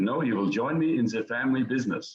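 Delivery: put-on speaking with German accent. Quoting what his father told him, in his father's German accent. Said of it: "in his German accent".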